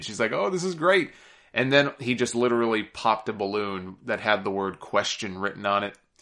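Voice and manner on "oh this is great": put-on high, thrilled, excited gush. Recounting John's proposal tease, acting out her reaction: imitating Nikki's excitement. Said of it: "Nikki got all excited".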